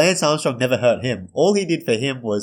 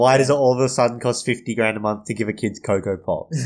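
usual speaking voice

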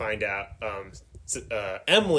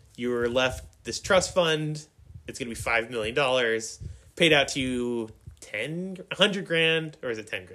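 ordinary talk

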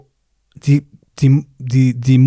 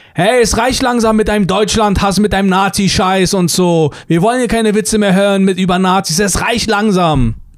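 high-pitched, heckling shout; 6 semitones higher than usual. Retelling how a man called in during the show, retelling his call-out. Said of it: "Und dann ruft er so rein".

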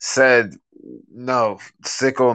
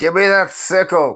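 high, shrieking, screeching, insistent voice; 8 semitones higher than usual. Meryl responds to the group, screeching in Draconic. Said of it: "screeches in Draconic".

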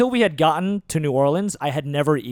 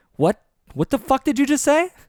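put-on very high voice, startled and baffled; 10 semitones higher, 3 dB louder than usual. Retelling someone's unexpected remark, acting out own reaction: retelling own confused reaction. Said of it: "I just look up like".

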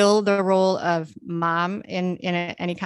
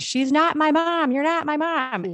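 put-on very high shrieking, screaming meltdown; 9 semitones higher than usual. Retelling how the stepdaughter reacted in a salon: imitating a child screaming. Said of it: "went bananas and started screaming".

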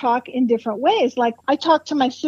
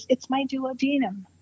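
timid, meek, mild, quiet little voice; 8 dB quieter than usual. Retelling the first thing out of a woman's mouth, imitating her meek, mild, quiet voice. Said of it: "in a meek, mild, quiet voice".

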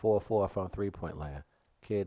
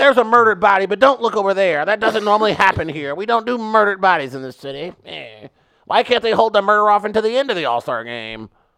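very high, very loud St. Louis local voice; 12 semitones higher, 16 dB louder than usual. Speaker riffs as a St. Louis local after being asked, St. Louis local voice. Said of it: "That's what my inner St. Louis would sound like".

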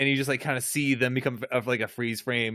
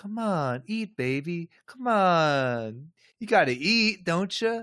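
very slow, kind, gentle, high, drawn-out coaxing; 6 semitones higher than usual. Retelling how a captor coaxes a prisoner to eat: imitating a kind, gentle coaxing. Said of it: "very kind and gentle".

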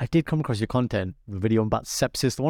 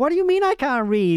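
put-on American accent, very high-pitched; 13 semitones higher, 4 dB louder than usual. Retelling a clip, quoting an OnlyFans model's retort in an American accent. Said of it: "Like American accent".

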